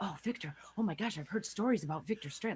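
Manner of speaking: put-on whisper. Describing how nobody in the hotel reacts to the name: imitating someone whispering. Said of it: "you don't see anybody whispering like".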